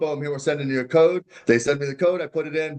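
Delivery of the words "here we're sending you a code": mock automated phone voice, higher pitch. Speaker retells a hacking-alert phone call, imitating an automated phone voice. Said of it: "Here's the automated voice".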